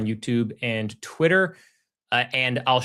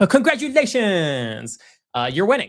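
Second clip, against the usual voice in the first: high, swooping, sing-song character voice; 8 semitones higher, 5 dB louder than usual. Congratulating viewers with an active short: Peanut impression. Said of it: "my best, uh, Peanut impression".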